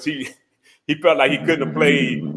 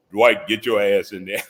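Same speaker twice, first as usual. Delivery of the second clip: sudden deep, low voice; 5 semitones lower than usual. Retelling a story, the speaker quotes a man calling out to Dwight, deep voice. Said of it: "deep voice".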